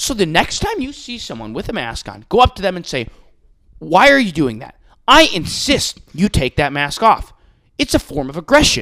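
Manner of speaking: put-on old-fashioned TV newsman reading voice. Retelling a TV host telling viewers about masks: imitating Tucker Carlson, Cronkite-esque newsman tone. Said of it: "Walter Cronkite-esque way".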